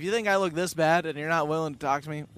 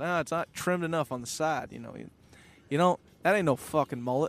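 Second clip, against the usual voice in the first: put-on Southern US accent. Retelling what a guy said on a conference call, Southern accent. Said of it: "he's got this Southern accent".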